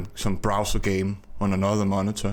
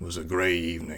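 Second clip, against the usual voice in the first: gritty, hard-boiled noir narration voice; 3 semitones lower, 4 dB quieter than usual. Illustrating the kind of voice used to narrate a noir book: noir narrator voice. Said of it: "practicing his narrator voice for a noir, noir book. You know, that very kind of voice where you talk like this".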